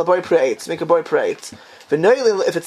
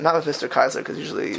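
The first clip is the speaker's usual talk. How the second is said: ordinary talk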